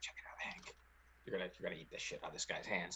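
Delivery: hushed, very quiet whisper. Voicing a character who leans over to another character: whispering. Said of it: "Biffle kinda whispers to Hank".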